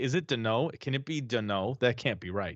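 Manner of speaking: ordinary delivery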